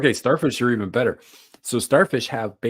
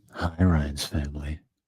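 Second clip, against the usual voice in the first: very low, sultry tone; 7 semitones lower, 5 dB quieter than usual. Greeting Ryan's family in a put-on sultry voice. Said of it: "in a sultry voice again".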